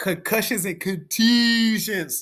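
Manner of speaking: put-on Baltimore accent. Talking about stone-throwing after soccer games, the speaker puts on his best Baltimore accent. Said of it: "in my best Baltimore accent".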